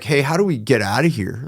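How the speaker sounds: imitated whisper. Retelling whispering to companions while pressed against a hotel wall: imitating own past whisper. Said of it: "whispering to the people with me".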